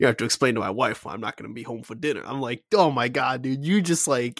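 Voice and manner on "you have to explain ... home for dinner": thick, smooth voice. Speaker praises the actor playing Commissioner Loeb, smooth, thick Commissioner Loeb voice. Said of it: "a smooth, thick voice".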